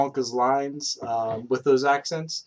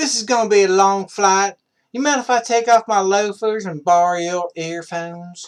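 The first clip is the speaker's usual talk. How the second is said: put-on American southern drawl, high and raised; 6 semitones higher, 6 dB louder than usual. Trying out a list of accents, doing one of them: southern drawl. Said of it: "the Southern Drawl".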